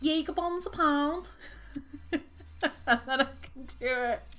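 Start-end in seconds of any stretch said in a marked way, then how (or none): 0.0-1.3 full Scouse Liverpool accent, pitched up. Saying a set phrase to get into a Liverpool accent: Liverpool accent. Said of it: "To get into doing a Liverpool accent, I have to say".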